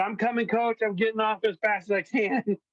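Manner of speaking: high-pitched, pained screaming yell. Retelling an injured athlete crawling off the field: imitating someone screaming. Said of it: "he's screaming out during a football game".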